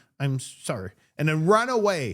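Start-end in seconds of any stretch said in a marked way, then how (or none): 0.2-0.9 mock childish voice, reluctant and sorry. Acting out a child who apologizes while looking at the ground, imitating a child's reluctant apology. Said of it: "when a child apologizes to you".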